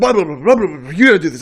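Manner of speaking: loud, hurried gabble, rattled off, racing. Speaker recalling a church service, mimicking the pastor's rushed, very fast talking. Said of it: "the pastor was talking so fast".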